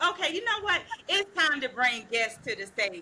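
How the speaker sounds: ordinary talk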